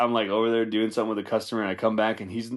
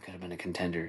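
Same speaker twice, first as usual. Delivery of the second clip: mock under-breath mutter, much quieter; 4 semitones lower, 11 dB quieter than usual. Retelling how he'd slip a movie quote into talk, muttering it under his breath. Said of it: "like under his breath".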